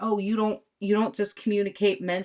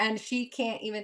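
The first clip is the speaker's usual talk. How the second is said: plain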